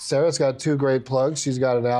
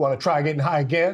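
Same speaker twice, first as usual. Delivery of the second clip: put-on sinister, very threatening, menacing voice. Imagining a fan approaching after a show, the speaker quotes them in a mock-threatening voice. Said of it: "Very in a very threatening voice".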